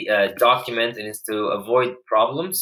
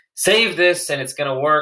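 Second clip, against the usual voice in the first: raised, pitched-up shouted yell; 6 semitones higher, 3 dB louder than usual. Speaker stuck fifteen minutes on a minuscule problem finally fixes it, yelling. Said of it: "sorry, I'm yelling".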